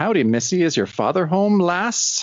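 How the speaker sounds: terrible fake Irish brogue. Imagining him talking to Jack's sister, doing Clancy in a terrible brogue. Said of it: "some kind of terrible brogue where suddenly he's like".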